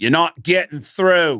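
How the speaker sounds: put-on slow, hackneyed Australian accent, a bit off. Retelling what a man in a Melbourne crowd said: Australian accent. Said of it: "That's a good Australian accent".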